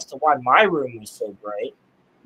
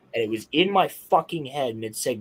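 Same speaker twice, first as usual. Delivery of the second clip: plain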